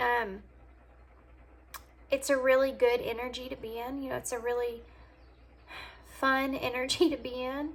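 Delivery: getting emotional, choked-up, voice catching. Speaking to someone about their connection, getting emotional. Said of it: "now I'm getting emotional even".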